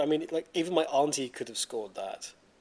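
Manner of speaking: ordinary talk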